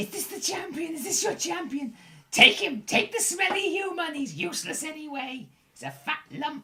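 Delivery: put-on goblin creature voice, very high. Narrator voicing a goblin who shoves a human toward the listener, goblin voice. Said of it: "This goblin goes".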